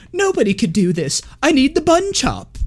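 put-on very high, helpless sing-song pouty whine. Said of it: "pouting, going like".

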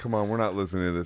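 mock fed-up, irritated, pissed-off tone. Retelling what a companion said: imitating someone pissed off. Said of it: "he was all pissed off".

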